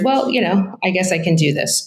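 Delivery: ordinary delivery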